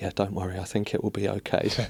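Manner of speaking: put-on laughing speech. Retelling someone's emailed reply about the towels: imitating a reply said laughing. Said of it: "the tone of it, just, like, basically laughing".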